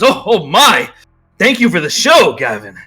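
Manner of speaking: hyped-up, swooping, excited announcer voice. Narrating a story where an announcer reacts to the show, announcer voice. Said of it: "as the announcer goes".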